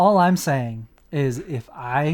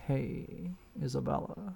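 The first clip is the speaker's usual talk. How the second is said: mock laid-back casual voice, quieter; 16 dB quieter than usual. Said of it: "It's more casual".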